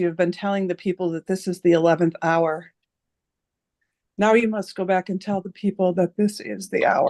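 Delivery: choked-up, throat catching with emotion. Quoting a Hopi elder at the end of a discussion: choked up. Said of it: "I'm getting choked up".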